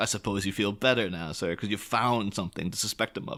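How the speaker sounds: plain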